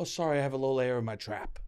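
dainty, prim, terribly proper, overly polite manner. Mocking someone who apologizes for burping: imitating an overly polite person. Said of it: "someone trying to be very polite".

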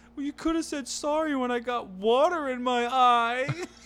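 put-on teary, very high, drawn-out whine. Retelling drying her off after a bath, speaker quotes her: imitating someone crying a little. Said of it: "And she's crying a little bit".

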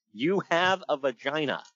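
normal talking voice

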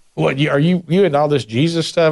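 scoffing tone dripping with sarcasm. Imitating someone who mocks a follower of Jesus: imitating a sarcastic tone. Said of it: "have you ever had anybody speak to you that way?".

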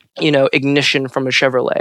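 ordinary delivery

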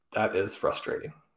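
acted, utterly flat, hushed, breathy, understated deadpan. Quoting the game's color commentator reacting to a stat, imitating deadpan delivery. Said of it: "just very deadpan says".

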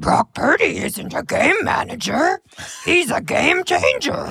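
mock puppet character voice. Asked to show what they've got, giving football analysis in a Grover-like Muppet voice. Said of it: "That's Grover".

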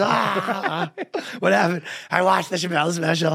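high, anguished, pained outcry. Acting out a patient on a stretcher in a sketch idea: screaming on a stretcher. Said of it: "He's screaming".

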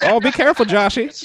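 put-on very high, old-timey 1920s flapper voice. Quoting a mother's warning to her son: old-timey 1920s flapper voice. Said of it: "like a flapper from the 19th, the roaring 20s".

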